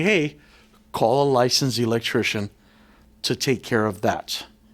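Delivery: plain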